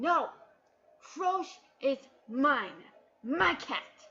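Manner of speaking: loud, slow, insistent, possessive exclamation. Retelling a story, voicing a character who claims the cat, acting out an exclamation. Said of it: "Rogue is like exclaiming".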